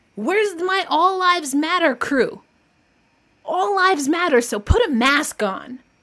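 fired-up, heated voice. Host speaking out to listeners on the show, worked up. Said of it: "I'm really worked up".

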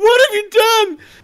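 very high, drawn-out, sobbing crying wail. Voicing Jimmy, who runs to Kerrigan and starts crying: Jimmy crying. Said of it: "starts crying and goes".

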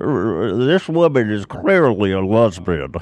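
stumbling at the start, then kept slow. Showing the others his Mitch McConnell impression. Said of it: "Do you like my Mitch McConnell".

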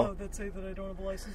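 normal talking voice

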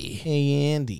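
high creepy doll voice. Comparing Chucky's way of talking to a famous actor's, Chucky voice. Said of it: "very like Jack Nicholson almost".

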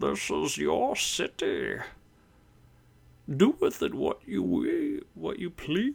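slow, rough, rasping villain voice, swooping. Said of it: "Can you do an impression".

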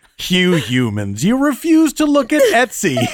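put-on mocking, godlike alien voice. Mocking a friend who won't look at Etsy: Q voice. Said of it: "I'm being like Q".

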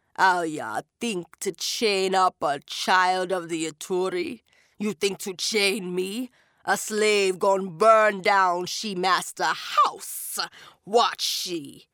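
guttural demonic voice from the back of the throat. Narrating the story, voice the Jab Man speaking to Talsi in a guttural Jab Man voice. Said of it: "his voice was guttural".

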